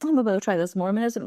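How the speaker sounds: plain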